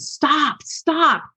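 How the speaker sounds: high-pitched scream. A mother retells yelling at her son through a shut car window, retelling a scream. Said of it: "I'm screaming".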